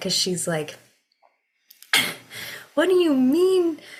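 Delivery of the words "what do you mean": high, fired-up, indignant outrage. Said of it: "very fired up about it".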